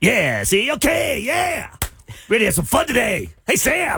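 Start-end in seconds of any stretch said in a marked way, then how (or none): 2.3-4.0 gross puking voice with an aggressive edge. Asked for a puke voice, the speaker tries one out, greeting sam. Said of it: "What's your puke voice?".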